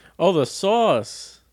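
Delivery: announcer-style delivery, very high. Realizing the other person means the sauce, announcer voice. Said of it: "You sound like an announcer".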